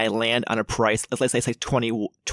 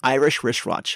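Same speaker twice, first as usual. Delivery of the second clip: a little faster, with words pressed together; 2 semitones higher than usual. Demonstrating a tongue twister to a partner, saying it a little faster. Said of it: "You gotta say it a little faster than that".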